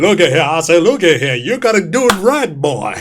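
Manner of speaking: showy, blustering cartoon voice, pitch swinging all over. Listing favorite characters from the show, quoting one: Foghorn Leghorn voice. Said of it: "The Foghorn Leghorn".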